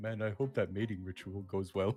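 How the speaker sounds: muttered under breath. A tabletop player voices their character's remark, lightly under his breath. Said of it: "lightly under his breath".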